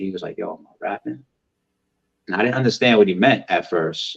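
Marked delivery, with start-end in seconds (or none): 0.4-1.2 acted out whisper, much quieter. Retelling how a man walked up and whispered in his ear: retelling a whisper. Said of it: "he like whispers in my ear".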